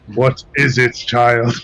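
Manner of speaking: very loud, grand, booming voice. Playing someone speaking telepathically, answering in the lowest voice possible. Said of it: "speak in my lowest voice that I can".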